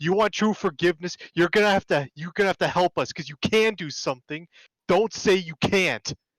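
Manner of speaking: very frustrated acted outburst. Voicing a player character's sudden outburst at someone apologizing: in character, very frustrated outburst. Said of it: "he's gonna be visibly very frustrated".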